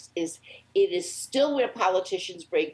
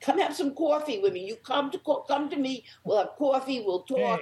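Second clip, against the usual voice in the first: hammed-up, exaggerated Bronx accent, pitched up; 7 semitones higher than usual. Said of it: "What's wrong with your accent?".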